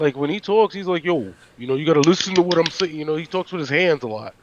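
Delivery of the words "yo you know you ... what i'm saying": put-on New York Italian accent, man's voice. Describing how Taz talks like a real Italian father: Taz impression. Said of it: "that's a real Italian father. Like, ... he's like".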